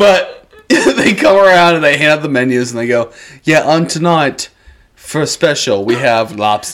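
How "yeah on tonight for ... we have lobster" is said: put-on English accent. Retelling restaurant staff handing out menus and announcing a special, imitating a waiter's english accent. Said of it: "Clearly had an English accent".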